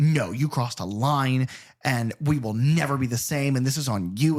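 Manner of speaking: flat-out stern, unforgiving, final tone with no give. Retelling a heated quarrel between two strangers, imitating someone refusing forgiveness. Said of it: "the girl who was not having it".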